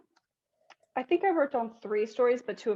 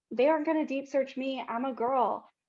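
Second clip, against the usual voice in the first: usual speaking voice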